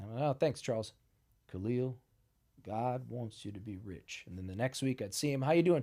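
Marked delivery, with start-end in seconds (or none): 1.5-4.2 gentle, soft, slow, unhurried southern drawl. Retelling what Charles always told him while he was homeless, imitating Charles's southern drawl. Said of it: "He had this southern drawl".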